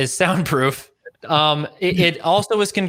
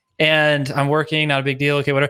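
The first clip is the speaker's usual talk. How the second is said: ordinary delivery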